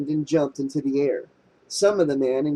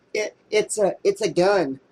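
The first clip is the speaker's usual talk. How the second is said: slow, trembling, halting, quivering voice; 4 semitones higher than usual. A character answers a fearful companion's question about the object, quivering voice. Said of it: "Herbert said in his own quivering voice".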